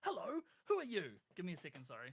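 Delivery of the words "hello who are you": very high, very loud, cheerful friendly scream. Narrating a floating character screaming at a unicorn, friendly scream. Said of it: "screams at this unicorn in a very friendly voice".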